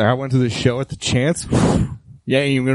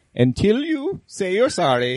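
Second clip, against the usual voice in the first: put-on swooping Norwegian or Swedish accent; 7 semitones higher than usual. Acting out a jail scene about a Swedish band member: Scandinavian accent. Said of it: "like in a Norwegian accent, or Swedish, right?".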